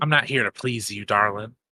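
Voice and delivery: dry, amused, wry, teasing, dismissive tone. Voicing a character answering another player's flirting, said with a smirk. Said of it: "she says with a smirk".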